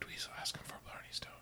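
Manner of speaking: whispered aside. A player making an aside to a fellow player, whispering. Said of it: "I'm just going to whisper".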